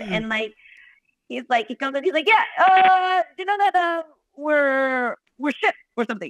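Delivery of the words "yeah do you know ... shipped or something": clumsy, halting, pitched-up weird guy voice. Retelling what a friend said on first meeting: bad Johnny impression. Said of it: "I'm not doing a good job of you, Johnny".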